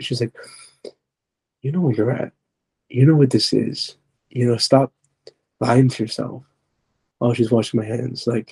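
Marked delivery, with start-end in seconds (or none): 1.6-6.4 eerie, demonic voice with strange, weird pitch. Retelling a hallucination of the mother scolding: imitating a weird-pitched demonic voice. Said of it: "talking in this weird pitch".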